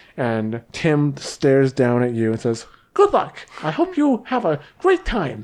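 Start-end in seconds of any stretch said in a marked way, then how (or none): 3.0-5.5 weird funny voice, very high, squeaky and swooping. Voicing a towering Goliath wishing an opponent luck: weird funny voice of Tim the Goliath. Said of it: "all Goliaths have weird, funny voices".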